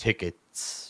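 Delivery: deep resonant voice, whispered and hushed. Describing a figure holding out a hand, then voicing it: deep resonant voice. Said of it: "you hear a deep resonant voice say".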